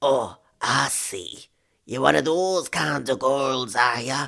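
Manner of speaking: put-on snarling, spiteful, nasty tone. Narrator reads a man's reply after he changed his tone: snarling. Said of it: "He snarled".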